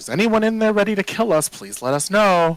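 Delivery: very high, sing-song sarcastic shout. A character cups her hands and shouts into the mausoleum: sarcastic shout. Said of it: "just shouts into the into the mausoleum".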